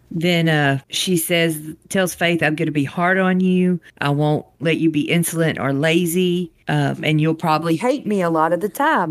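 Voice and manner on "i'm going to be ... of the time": ordinary talk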